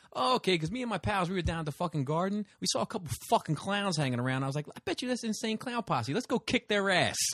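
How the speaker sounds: put-on heavy tough guy New York accent, very high. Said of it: "it was like a super New Yorker guy".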